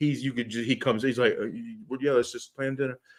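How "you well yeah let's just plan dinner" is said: mock flat monotone delivery, much quieter. Imitating a service manager who wants to leave, in a flat monotone. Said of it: "he's got the monotone".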